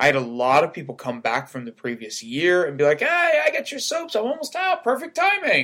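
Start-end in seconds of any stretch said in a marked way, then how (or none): 3.0-5.6 very high, pitched-way-up voice. Retelling what returning customers said at the booth: imitating a returning customer. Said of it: "In that voice".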